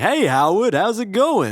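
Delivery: very high, slow, drawn-out friendly tone. Retelling a movie scene with the neighbor: imitating Phil Hartman as the neighbor. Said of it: "He's like".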